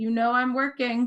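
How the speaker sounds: firm, stern, severe voice. Narrator voicing someone in the study answering a knock, stern voice. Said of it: "you just hear a kind of stern voice say".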